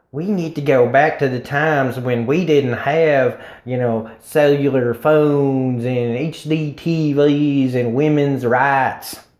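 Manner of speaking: put-on, broad, laid-on Southern accent. Mocking backward people's wishes in a southern accent. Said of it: "I used a Southern accent just then".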